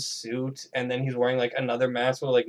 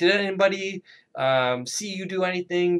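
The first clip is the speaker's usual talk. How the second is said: put-on high-pitched scolding yell; 6 semitones higher than usual. Recounting a horror movie scene where the dad confronts another character: imitating someone yelling. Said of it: "he's like yelling at him".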